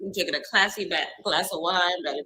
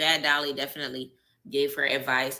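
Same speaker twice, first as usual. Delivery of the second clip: ordinary delivery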